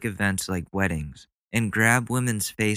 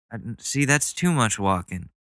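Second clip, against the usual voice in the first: ordinary talk, nothing marked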